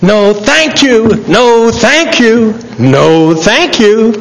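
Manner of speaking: put-on high child's scream.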